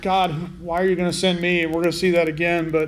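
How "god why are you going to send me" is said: ordinary delivery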